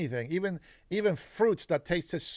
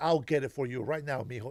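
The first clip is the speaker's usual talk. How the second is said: put-on sobbing, tearful, crying voice; 5 semitones lower than usual. Retelling his mother promising to bring food: imitating his mother crying. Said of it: "she just ran crying".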